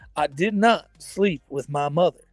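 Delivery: very slow, deliberate speech, every word stretched. Quoting a famous speech: Bill Clinton voice. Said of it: "that Bill Clinton speech".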